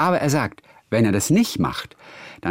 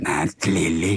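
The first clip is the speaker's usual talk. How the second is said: put-on deep grandfatherly old man voice; 6 semitones lower than usual. Imitating the TV grandfather Rolf calling Lilly, deep voice imitating Rolf. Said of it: "Der hat immer der Rolf hat immer diese tiefe Stimme".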